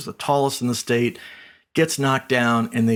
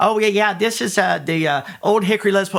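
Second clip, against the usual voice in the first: high, goofy, cartoonish voice, pitched up; 9 semitones higher, 4 dB louder than usual. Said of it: "I'm talking in this goofy, silly, you know, cartoonish voice".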